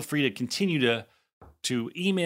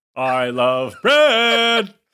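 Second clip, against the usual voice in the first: very loud, high-pitched, grand belted declaration; 6 semitones higher, 9 dB louder than usual. Repeating a line from a commercial: Oprah impression. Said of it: "She doesn't do it like that".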